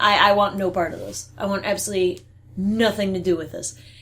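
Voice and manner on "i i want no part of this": ordinary delivery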